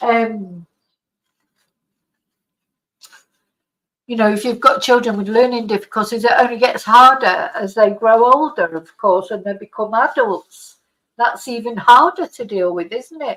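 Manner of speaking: tearful, close to tears, on the verge of crying. Speaking in a video right after apologizing for nearly crying, tearful. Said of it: "I can't get through a video without crying".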